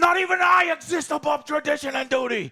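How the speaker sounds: very high, very loud, shrill scream. Retelling a TV scene where a man screams at Ray, retelling a scream. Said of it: "he's screaming at Ray".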